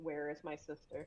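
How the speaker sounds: very gentle voice. Showing how the character Fiona asks for her sister: very gentle voice. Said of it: "that kind of voice".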